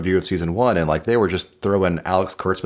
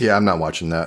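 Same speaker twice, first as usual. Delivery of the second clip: normal talking voice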